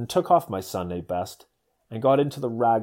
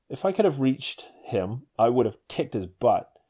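normal talking voice

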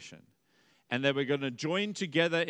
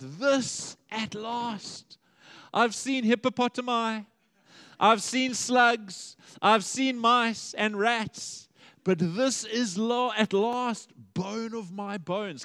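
put-on unrestrained loud shout, stretched out and drawn out; 8 semitones higher, 5 dB louder than usual. Retelling Adam's first reaction on seeing Eve; shouting out. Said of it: "He shouts out".

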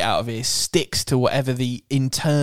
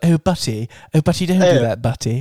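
put-on upper-class child voice; 3 dB louder than usual. Teasing the other speaker about how a word sounds, doing a posh kid voice. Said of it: "you sound like a posh kid who's got like".

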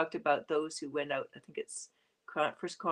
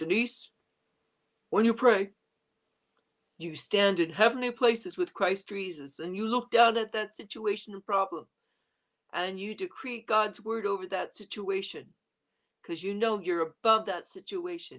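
big, gruff, put-on old man voice; 4 semitones higher, 3 dB louder than usual. Retelling how her apostle taught her to pray, in a big old gruff voice. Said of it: "big old gruff voice".

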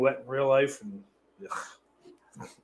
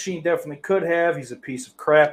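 usual speaking voice

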